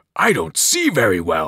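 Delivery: growled words dropped very low, deep. Narrator reading the Cyclops's line as he tries to contain his anger, growling. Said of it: "he growled".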